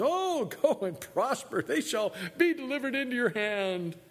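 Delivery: sneering mocking tone, very high-pitched. Narrating the scripture story, the speaker voices the reply about going to war, very mocking tone. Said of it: "no doubt with very mocking tones".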